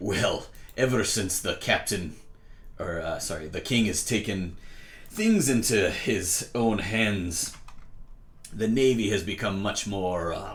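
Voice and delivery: put-on pirate brogue mixing Irish and Scottish accents. A pirate captain guiding the party explains the navy, in an Irish-Scottish pirate voice. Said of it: "this pirate is a Irish Scottish pirate mix. / a handkerchief out of his pocket and tie it around your head in like classic pirate. / this pirate is a Irish Scottish pirate mix. / Aye, we be pirates. P".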